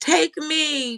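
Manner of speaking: very high-pitched mock sobbing, wailing cry. Imitating mourners at a funeral crying hard: imitating mourners crying hard. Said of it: "why they be crying so hard and".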